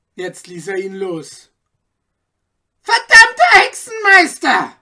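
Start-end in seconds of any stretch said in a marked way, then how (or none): 2.8-4.7 very loud, very high, shrill shout with swooping pitch. The judge, just released from a tight grip, curses the man, shouting. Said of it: "schrie der Richter".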